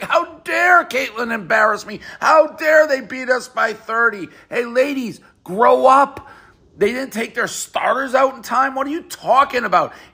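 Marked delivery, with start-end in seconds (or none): 0.0-4.3 put-on teary, whining fake crying. Retelling a player's complaint after a loss: mock crying. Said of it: "tears in her eyes, being like".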